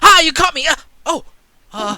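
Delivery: put-on shrill, very loud, very high, frightened child yelp. Voicing a child who pops out of a bush, scared. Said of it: "scared that he".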